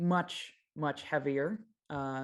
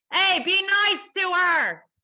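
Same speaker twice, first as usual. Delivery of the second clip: very loud, shrill, high-pitched shout; 11 dB louder than usual. A game narrator voices a mechanic calling from the other room, shouting. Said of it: "the mechanic shouts".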